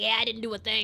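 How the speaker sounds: line in a put-on New York style accent. Voicing Inspector Hosonaga's reply in a scene, Hosonaga with New York accent. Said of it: "Turns out she has a New York accent".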